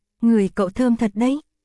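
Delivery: plain reading voice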